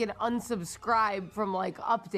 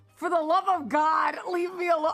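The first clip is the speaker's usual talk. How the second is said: high, loud, play-acted fed-up desperate pleading; 6 semitones higher, 5 dB louder than usual. Telling others about a spam roofer who keeps texting: retelling a pleading reply. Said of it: "I'm usually just sending him like a pleading".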